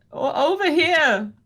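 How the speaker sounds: faraway, distant-sounding calling out. Voicing a voice calling from a far corner of the room: distant voice calling out. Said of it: "you can hear it sort of coming from this corner".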